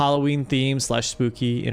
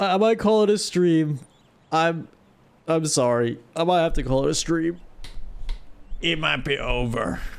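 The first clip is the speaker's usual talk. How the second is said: rough, croaking, hoarse voice; 3 semitones higher than usual. A streamer talking to viewers with a failing voice, croaky voice. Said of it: "My voice is croaky".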